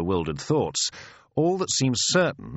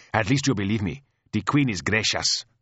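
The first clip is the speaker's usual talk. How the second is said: ordinary delivery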